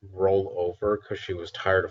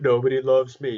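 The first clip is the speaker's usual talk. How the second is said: high, loud, fake, self-pitying sobbing; 6 semitones higher, 6 dB louder than usual. Imagining the dog alone among her treats one day, voicing her mock crying. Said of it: "She's just crying".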